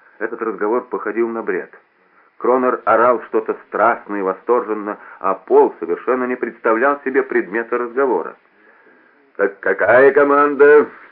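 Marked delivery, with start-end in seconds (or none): 9.4-10.9 slightly peevish and grumpy, raised pitch. [name] asks a distracted Paul again; slightly grumpy. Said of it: "спросил Кронер чуть брюзгливо".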